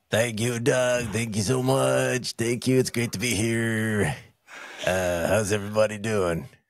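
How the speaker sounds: put-on smoker's character voice. Guest greets the podcast host after being welcomed back: smoking guy voice. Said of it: "That's my smoking guy voice".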